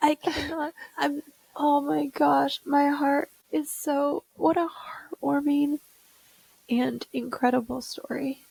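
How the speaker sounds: crying while talking. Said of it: "I'm crying over here".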